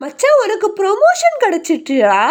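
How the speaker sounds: high, bright, loud and excited.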